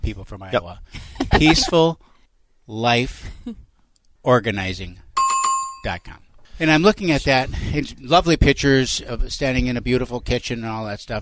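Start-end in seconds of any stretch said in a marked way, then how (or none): 1.4-6.2 said slowly and deliberately. Repeating a website name on request: said slowly. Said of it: "I'll say it slowly for you".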